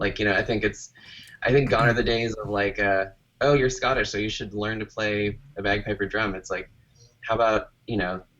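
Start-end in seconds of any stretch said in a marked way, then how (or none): none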